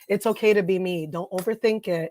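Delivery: normal talking voice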